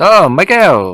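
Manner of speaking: put-on Spanish accent. Imitating how people in Spain would say a name: Spanish accent. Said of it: "They might say with a Spanish accent".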